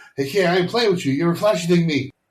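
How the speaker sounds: brash high-pitched banter. Quoting a movie scene to the other speaker: brash Will Smith impression. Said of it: "Will Smith just speaks much more brash".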